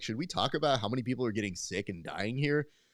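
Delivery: ordinary delivery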